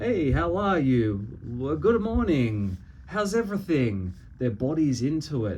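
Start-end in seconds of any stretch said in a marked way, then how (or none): 0.0-4.1 animated, lively, varied tone with wide pitch swoops. Contrasting with a monotone greeting, demonstrating a varied, animated voice. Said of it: "Their vocal tone is varied. It's not monotone. It's animated".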